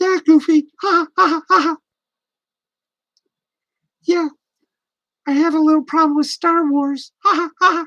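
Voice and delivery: put-on high-pitched cartoon mouse voice. Doing a scene between two cartoon characters: Mickey Mouse voice. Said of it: "the best Mickey Mouse and Goofy I, I can do".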